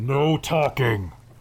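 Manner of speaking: loud, metallic voice echoing from a distance. A narrator voices a tiger rearing up at the back of the room: metallic voice. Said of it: "A metallic voice echoes from the back of the room".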